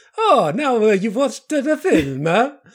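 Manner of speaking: put-on comedy Italian accent. Retelling a film's ending, imitating the comedy Italian guy. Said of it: "the comedy Italian guy speaking to camera".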